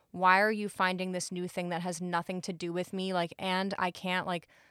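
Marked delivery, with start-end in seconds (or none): none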